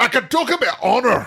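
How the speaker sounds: mean, harsh, very high-pitched Scottish accent. Repeating a movie line after another speaker: hard, mean Scottish accent. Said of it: "a hard, mean Scottish".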